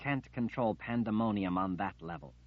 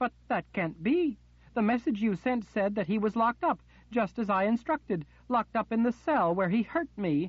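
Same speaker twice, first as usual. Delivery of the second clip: rising anger, very high and loud voice; 13 semitones higher, 5 dB louder than usual. Narrating the Queen answering in disbelief as she searches for words, voice rising with temper. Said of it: "The Queen's back was to [name]. / not wanting to believe what she was hearing as she searched for words. / Her temper, along with her voice, was rising by the moment".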